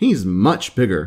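usual speaking voice

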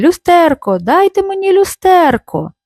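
high, urgent shouting. Minko, pulling the girl along, calls to the guests; shouting. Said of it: "викрикуючи до гостей".

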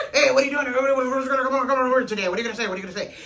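put-on mumbly, stuttering, fast voice. Showing how Tio Chon talks, in a fast mumbling Tio Chon voice. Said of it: "he mumbles and stutters a lot and talks real fast pattern. So Tio Chon does that too".

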